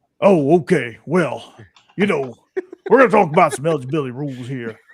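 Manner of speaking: gravel-throated coach voice, every word enunciated. Doing an impression of a man for the others: gravelly impression, no Cajun accent. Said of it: "no Cajun accent".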